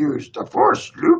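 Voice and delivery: high, creaky puppet voice. Retelling watching The Empire Strikes Back, quoting Yoda in a Yoda voice. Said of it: "And there's Yoda going".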